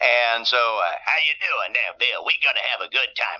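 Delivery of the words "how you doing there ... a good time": put-on old-time radio DJ patter voice. Recalling bringing a character onto a radio show: Wolfman Jack voice. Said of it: "I'd bring on Wolfman Jack".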